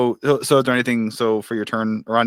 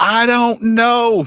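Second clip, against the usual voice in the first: shrill, very high, loud shouted yell; 12 semitones higher, 6 dB louder than usual. Game master voices a character calling out as the party flies past: Johan yelling. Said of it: "and he just yells".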